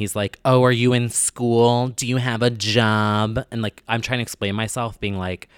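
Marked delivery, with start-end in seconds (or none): 0.4-3.4 mock condescending tone, much slower. Retelling a court hearing, the speaker quotes the judge: mocking a condescending judge. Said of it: "The judge is being super condescending".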